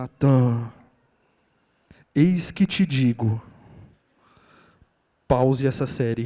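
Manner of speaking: very deep, loud, booming thunderous voice from above. Speaker imagines God tearing open the sky to call him, thunderous voice from heaven. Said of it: "com aquela voz de trovão".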